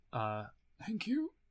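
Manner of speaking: small voice. Voicing someone in the back corner of the room, in a small voice. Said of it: "you can hear a small".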